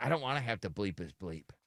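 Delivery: low, soft, annoyed voice. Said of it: "She's like".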